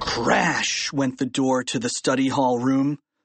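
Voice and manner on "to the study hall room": ordinary delivery, nothing marked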